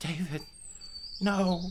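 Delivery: soft, weeping, sobbing goblin voice. Game master voicing the last remaining goblin as its friend is killed: crying goblin. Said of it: "tears are streaming from his eyes, and he goes".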